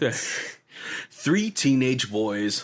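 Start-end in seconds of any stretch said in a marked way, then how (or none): 1.1-2.6 slow, dramatic movie-trailer announcer voice. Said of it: "He had that iconic trailer voice".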